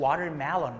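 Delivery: watermelon pronounced in an American accent.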